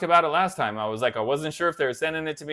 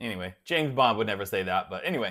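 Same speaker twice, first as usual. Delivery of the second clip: ordinary delivery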